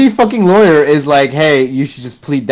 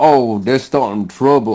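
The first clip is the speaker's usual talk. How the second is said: bad, fake put-on Southern accent; 3 semitones lower, 3 dB quieter than usual. Retelling a film scene's line: bad Nicolas Cage Southern accent. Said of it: "I can't do the accent".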